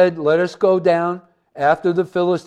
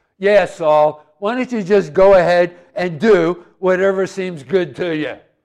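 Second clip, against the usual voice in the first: fed-up, mocking, sarcastic bad-attitude tone. Acting out the people's reply to Saul: put-on sarcastic bad attitude. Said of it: "With a bad attitude, it probably went something like this".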